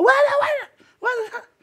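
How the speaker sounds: acted-out very high shrieking, screamed cries. Telling a story about a restaurant commotion, imitating a girl screaming. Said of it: "la niña empezó a gritar".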